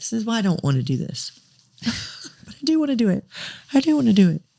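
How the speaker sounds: tearful crying speech, high and swooping. Talking to Adam about a grandma who is a hero, crying while talking. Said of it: "why am I crying".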